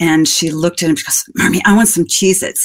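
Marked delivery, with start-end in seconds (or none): none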